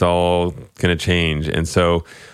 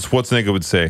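normal talking voice

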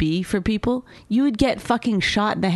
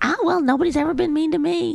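pitched-up sitcom cartoon housewife voice; 8 semitones higher than usual. Mocking someone who says nobody was mean: Marge Simpson voice. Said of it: "You sound like Marge Simpson".

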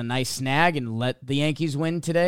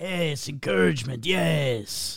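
each yes stretched out; 2 semitones higher than usual. Doing an impersonation of Salvador when asked: Salvador impersonation. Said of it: "do his best impersonation of Salvador".

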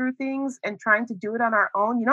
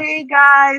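acted sheepish tone, raised voice; 5 semitones higher, 8 dB louder than usual. Acting out someone coming in the door: imitating a sheepish greeting. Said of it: "you know, sheepishly".

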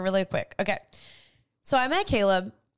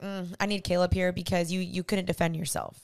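normal talking voice

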